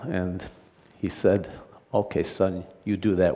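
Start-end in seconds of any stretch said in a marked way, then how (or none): 1.9-3.3 put-on German accent, quieter. Retelling the father's reply to a childhood promise, imitating his german accent. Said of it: "with his German accent".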